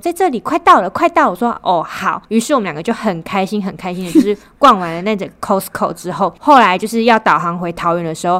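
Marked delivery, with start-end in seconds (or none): 0.0-1.3 abrupt, sudden, very high yell. Recounting a drive to Costco, retelling a sudden yell. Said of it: "他就这样突然大吼说".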